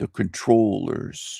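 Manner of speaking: slow, deliberate drawl, final s said as sh. Quoting how John Levi says the controllers, in John Levi's slow voice. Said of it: "in his slow voice".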